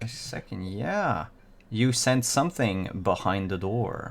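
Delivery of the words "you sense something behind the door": usual speaking voice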